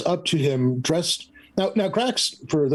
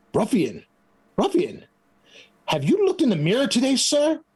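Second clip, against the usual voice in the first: indignant, offended tone, pitched up a bit; 10 semitones higher than usual. Voicing an offended half-orc who confronts a guard: half-orc speaking to a guard. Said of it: "he walks right up to the guard and says".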